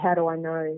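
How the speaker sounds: ordinary delivery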